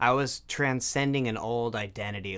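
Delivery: plain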